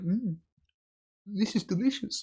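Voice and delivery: courteous, polite, mannered tone. Imitating Yelena politely eating a pickle on screen: polite Yelena impression. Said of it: "you're politely like".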